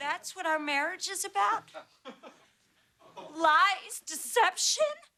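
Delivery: speaking through tears, tearful and crying. A wife answers her husband after a fight, crying. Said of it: "don't cry".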